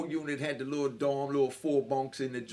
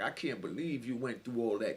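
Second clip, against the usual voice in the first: imitated tearful crying voice, lower and quieter; 3 semitones lower, 5 dB quieter than usual. Retelling what a parole board member said to him: imitating someone crying. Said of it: "she just started crying like".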